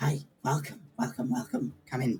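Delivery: twitchy, grinning halfling shopkeeper voice. Voicing a twitching halfling greeting customers: twitchy grinning halfling shopkeeper. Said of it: "he's like".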